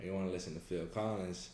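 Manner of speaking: ordinary talk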